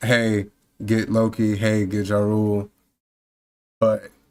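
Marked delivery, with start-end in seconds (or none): none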